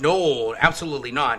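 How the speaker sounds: loud, dripping with sarcasm. Retelling a father's reply to a message, imitating a sarcastic denial.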